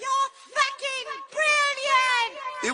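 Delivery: thrilled, shrieking high scream. Retelling what a girl from the crowd screamed: imitating her screamed accented line. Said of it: "she screamed with her accent".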